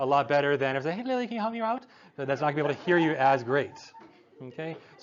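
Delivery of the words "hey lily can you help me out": very high-pitched voice. Demonstrating calling someone down the hall, in a high cue voice. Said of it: "your high cue voice".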